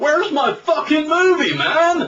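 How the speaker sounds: put-on high, slow, very loud yell in a thick Florida accent.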